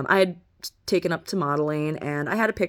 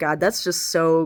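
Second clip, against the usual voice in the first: ordinary talk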